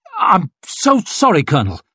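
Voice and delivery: high-pitched, halting, stuttering delivery. A swordsman lowering his steel speaks to the bleeding colonel, stammering. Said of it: "stammered West".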